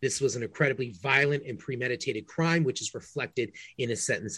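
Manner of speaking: usual speaking voice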